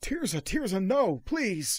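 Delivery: shrill, high, loud, desperate, terrified tone. Voicing an old man who stumbles away wounded: terrified pleading. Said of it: "stares at you with terrified eyes and says".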